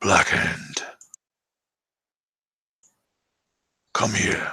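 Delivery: grumbled, muttering words. Narrating a scene, voicing a hunched figure calling you over, grumbling. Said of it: "He grumbles".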